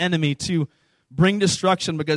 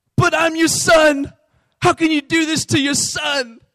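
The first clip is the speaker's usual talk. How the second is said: very high, pleading put-on British accent; 10 semitones higher, 4 dB louder than usual. Retelling a young boy's plea as he is about to be spanked, British accent. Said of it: "it's funnier when I say that with the British accent".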